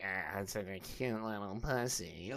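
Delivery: very soft, hushed, drawn-out, nasal put-on voice. Imitating how someone might talk to his girlfriend: imitating a nasally voice. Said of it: "he does it in, like, the nasally voice".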